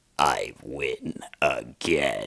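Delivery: grand, epic-sounding delivery in a deep voice. Showing how the lightning-shooting character really sounds: epic voice. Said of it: "he actually has an epic voice".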